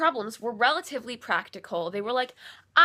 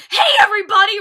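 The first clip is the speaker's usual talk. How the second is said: shrill, very high, very loud shriek; 10 semitones higher, 13 dB louder than usual. Recounting a jump scare, the speaker acts out Dan's yell: imitating Dan screaming. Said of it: "pops out from behind the wall and screams".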